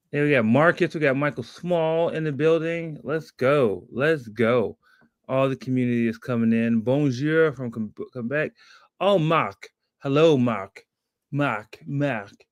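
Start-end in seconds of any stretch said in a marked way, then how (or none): 11.3-12.2 French accent, quieter. Greeting a viewer from Quebec by name: French accent. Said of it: "I'm trying to get my French accent back".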